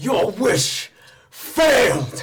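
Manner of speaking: booming, thundering, high, very loud delivery. Narrating a game scene, the combined dragon slayer entity speaks, booming voice. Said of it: "he booms".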